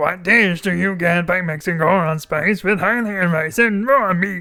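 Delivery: put-on puppet-show character voice. Reading a cooking quiz question from the game aloud, in a Muppet voice. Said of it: "I'm going into Muppet voice".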